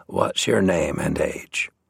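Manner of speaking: softly spoken, quiet, low-voiced. Narrating a man asking a boy who stepped closer, in a quiet voice. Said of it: "spoke in a quiet voice".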